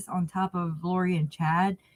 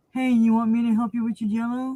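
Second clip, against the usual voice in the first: put-on very gentle, kid-glove, pitched-up delivery; 5 semitones higher than usual. Mocking how others gently handle a colleague: mock gentle tone. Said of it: "tell her gently".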